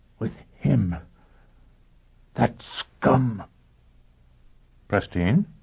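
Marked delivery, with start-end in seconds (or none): 0.2-3.4 slow, drawn-out whisper, words spaced apart. Pristine, learning news about his daughter Olivia, speaks; whispered. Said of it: "he whispered".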